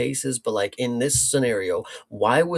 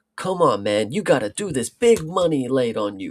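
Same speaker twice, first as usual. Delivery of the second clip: annoying, pestering, badgering, egging-on tone. Retelling how Lin urges Frank before the final match: imitating Lin being annoying. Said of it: "he just annoying as hell".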